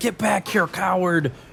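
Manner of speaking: angry, jeering voice. Voicing a cultist shouting at a fleeing fighter: cultist yelling. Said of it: "as you hear the cultist yell out".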